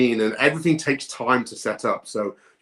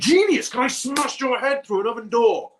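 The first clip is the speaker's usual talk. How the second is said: acted angry outburst, patience gone, lashing out; 12 semitones higher than usual. Retelling how a man with his camera rolling started losing his temper: imitating someone losing his temper. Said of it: "he starts losing his temper".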